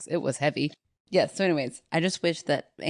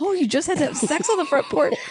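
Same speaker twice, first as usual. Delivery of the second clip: mock, very high, loud, earnest tone; 12 semitones higher, 5 dB louder than usual. Mimicking how the other speaker repeated a line back: imitating an earnest repeat. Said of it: "You repeated it back so earnestly".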